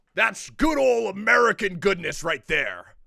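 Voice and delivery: bellowed loudly with a rough edge. Offering an impression to the others, the speaker does their best Senator Armstrong impression. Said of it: "I can do my best Senator Armstrong".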